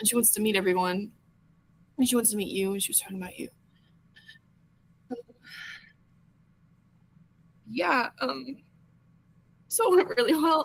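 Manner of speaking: tearful voice, crying while speaking. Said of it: "that's not what I'm crying about".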